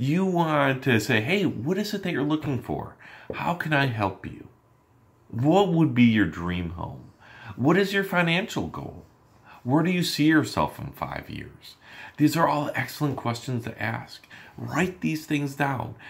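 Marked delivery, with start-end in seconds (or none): 1.2-11.8 friendly, lively, expressive voice full of inflection. Showing salespeople how to sound on the phone: lively, inflected voice. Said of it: "have inflections in your voice".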